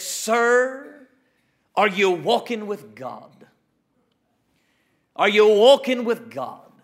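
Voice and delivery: put-on broad-voweled Scottish accent, the word "sir" stretched out. Retelling what Duncan Campbell asked the deacon: Duncan Campbell's Scottish accent. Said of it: "In that Scottish accent".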